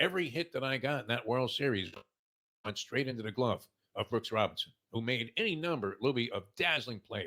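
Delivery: ordinary talk, nothing marked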